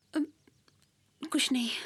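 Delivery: tearful voice, crying while talking. Answering a worried question about why she is crying: crying while talking. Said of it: "रो क्यों रही हो?".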